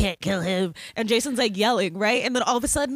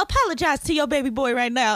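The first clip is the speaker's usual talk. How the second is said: put-on scolding tone, pitched higher; 4 semitones higher than usual. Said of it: "She'd be like".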